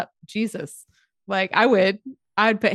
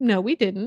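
mock brush-off, defiant and dismissive, plainly insincere. Describing a character's tone of voice: imitating a character's denying tone. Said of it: "His, like, tone of voice is like".

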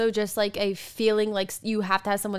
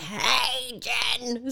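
teasing, mocking grandpa voice. Showing how they make fun of Pep Pep: mocking imitation of Pep Pep. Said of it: "that's the kind of making fun I mean".

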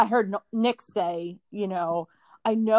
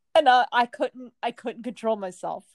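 ordinary talk, nothing marked

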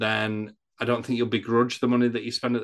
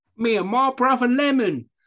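put-on bad Cockney accent, higher and louder; 13 semitones higher, 6 dB louder than usual. Joining in mocking an actor's awful accent: imitating Aaron Taylor-Johnson's bad Cockney accent. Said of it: "your accent's awful".

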